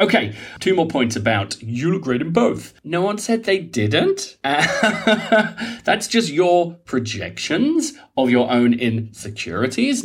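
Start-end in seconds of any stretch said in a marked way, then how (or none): 2.8-10.0 put-on valley girl voice, sing-song, drawn out, big swoops. Giving advice about insecurities, suddenly in a valley girl voice. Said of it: "No idea why I'm talking like a valley girl".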